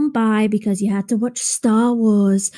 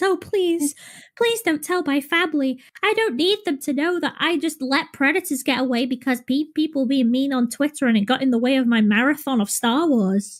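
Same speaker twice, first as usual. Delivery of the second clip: mock over-emotional, whiny, begging tone; 4 semitones higher, 4 dB quieter than usual. Mocking someone whose apology was monotone but who now begs, mock pleading. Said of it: "you're doing a whole lot more pleading".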